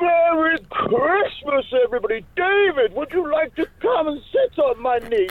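jolly festive voice. Asked by the host to take it away, the guest performs a Santa voice. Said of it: "we're intrigued by your Santa. Take it away".

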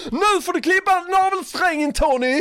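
mock, very high, pitched-way-up screamed yell. Retelling how Annika yelled at Tony to cut the cord: imitating Annika shouting. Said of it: "hon skriker till honom".

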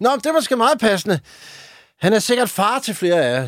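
high, called-out, play-acted cheeky tone. Retelling what he shouted at people who came to see Jarlen: retelling his own shout. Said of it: "Råber".

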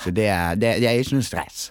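Bergen Norwegian dialect. Agreeing with the others to walk instead of taking the train; Bergen Norwegian dialect.

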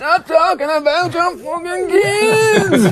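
put-on broad Dublin accent, very high, kids stretched. Retelling how Adrian would react during friendly chats, Adrian in hardcore Dublin accent. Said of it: "In a hardcore Dublin accent".

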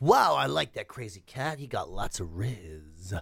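slow, mocking youth slang, riz drawn out. Speaker describes how young people talk about a charismatic person, imitating how young people talk. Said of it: "You know the way young people talk".

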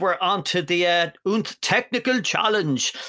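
poorly faked German accent. Announcing the next bake-off round, in a really bad German accent. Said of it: "I have a really bad German accent".

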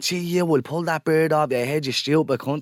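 mild, held-in, abusive angry yelling. Retelling a near crash, quoting the other car's driver: imitating someone screaming. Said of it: "starts screaming".

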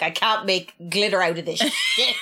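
put-on annoyed tone. Recalling how a man reacted when he came back upstairs, imitating someone annoyed. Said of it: "he was so annoyed".

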